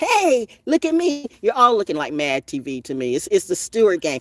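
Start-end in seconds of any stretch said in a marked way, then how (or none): 0.0-1.3 very high, drawn-out, mocking show-off voice. Mocking someone who wants fame: mocking a fame seeker. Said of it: "the dumb bat who just wants to do anything for fame".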